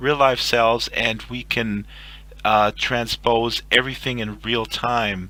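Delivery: ordinary talk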